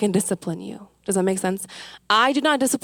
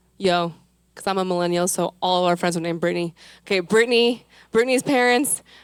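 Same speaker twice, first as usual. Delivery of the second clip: usual speaking voice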